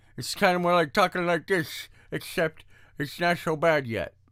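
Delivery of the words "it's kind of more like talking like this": heavily slurred, exaggerated, higher-pitched speech. Radio host with a sore on the tongue showing how it sounds, exaggerated slurring. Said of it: "And so I'm slurring".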